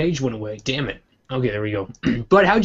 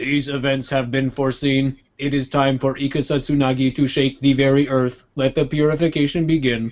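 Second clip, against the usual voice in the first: put-on robot voice with a slight Indian accent. Playing a fairy tale wizard, in a robot voice that sounds slightly Indian. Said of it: "Why does he suddenly sound slightly Indian?".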